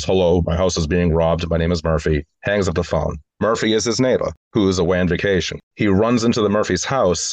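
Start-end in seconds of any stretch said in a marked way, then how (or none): none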